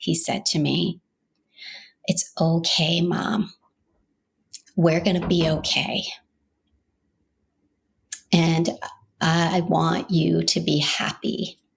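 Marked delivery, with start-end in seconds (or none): 2.1-11.5 put-on gentle, loving, sweet, compassionate voice. A mother retells what her son said to her in the car, imitating a sweet, compassionate voice. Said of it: "in this just sweet, compassionate voice".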